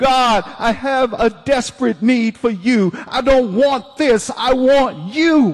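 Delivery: desperate cry, high-pitched and loud.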